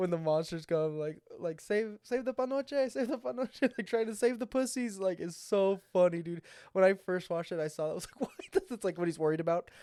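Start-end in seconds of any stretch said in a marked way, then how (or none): 1.6-3.6 mock, high, pitched-up, repeated yelled cry. Retelling a movie character yelling when the monsters come: retelling a yell. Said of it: "He's yelling like".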